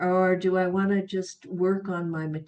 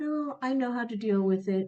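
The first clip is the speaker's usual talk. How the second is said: play-acted sweet, gentle, humble, modest tone; 4 semitones higher than usual. Retelling a patient's reply to a question about pain: imitating someone speaking sweetly and humbly. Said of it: "very sweetly and humbly".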